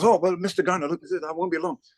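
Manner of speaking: bad put-on West Indian accent. Retelling a man asking for his autograph, in a horrible West Indian accent. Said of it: "It's a horrible West Indian accent".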